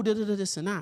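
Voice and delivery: ordinary delivery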